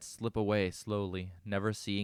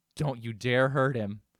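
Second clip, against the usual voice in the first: venom-laced, loud voice; 4 semitones higher, 6 dB louder than usual. Reading a story where a captive warns captors: venomous warning. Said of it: "venom in my voice".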